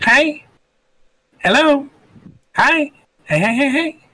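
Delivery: tiny, very high little brownie creature voice. Game narrator voicing a small brownie greeting the player, small brownie voice. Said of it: "a small little brownie".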